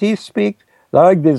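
high-pitched, put-on German-accented voice.

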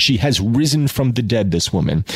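ordinary delivery

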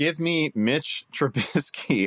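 very slow, high words broken by laughter. Naming a surprising fantasy quarterback pick: laughing while talking. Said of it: "can't even say it without laughing".

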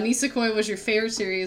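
normal talking voice

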